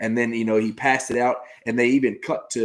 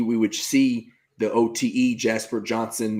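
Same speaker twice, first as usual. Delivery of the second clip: ordinary talk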